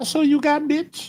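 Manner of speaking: nice, sweet, feminine voice, very high pitch. A player speaks their character's line during a game, nice female voice. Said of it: "in a nice female voice".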